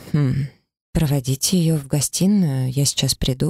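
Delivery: ordinary delivery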